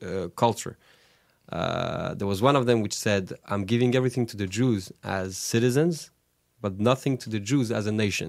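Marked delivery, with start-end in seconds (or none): none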